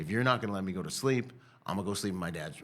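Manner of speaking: ordinary delivery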